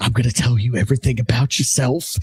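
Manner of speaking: low whispering. Acting out a pictured scene, speaking into someone's ear: whispering. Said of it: "He starts whispering".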